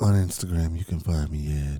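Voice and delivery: put-on seductive voice, very deep, loud and booming. Giving social media handles as a joke: mock sexy voice. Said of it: "Why are you guys doing these voices?".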